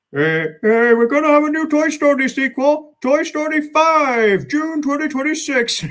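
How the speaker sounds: very high, cartoonish toy piggy-bank voice. Imagining a favorite Toy Story character saying this, Ham the Piggy Bank impression. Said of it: "I could actually envisage um, Ham saying that".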